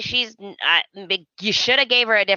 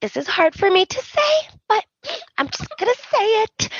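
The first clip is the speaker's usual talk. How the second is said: very high voice, fighting back tears; 14 semitones higher than usual. Retelling a scene where Taylor speaks while holding back tears: imitating Taylor holding back tears. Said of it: "blinking, like, holding back the tears".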